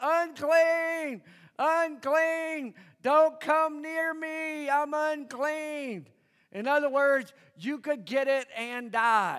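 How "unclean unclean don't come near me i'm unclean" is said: slow, high, full-voice yell at top of lungs. Acting out a man with leprosy warning people away: imitating a leper yelling loudly. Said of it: "he would have to yell at the top of his lungs".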